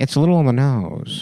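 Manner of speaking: calm radio presenter voice. Retelling what a radio host said about a title: Ira Glass voice. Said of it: "And then Ira Glass was like".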